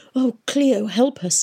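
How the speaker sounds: breathed. Narrator reads Catherine's line as she appeals to Cleo: breathed. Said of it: "breathed Catherine".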